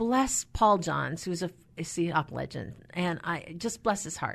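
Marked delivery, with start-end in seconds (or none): none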